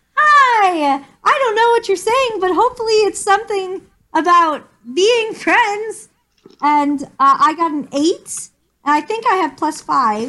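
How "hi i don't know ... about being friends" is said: very friendly, welcoming tone. Asked what they're doing with their voice, speaker answers in a very friendly tone. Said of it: "I'm just gonna make a very friendly tone".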